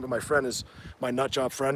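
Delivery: ordinary talk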